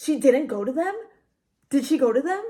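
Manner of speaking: put-on badgering tone, fired off quickly. Retelling a coworker's rapid questions, imitating his pushy questioning. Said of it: "he was asking it like this".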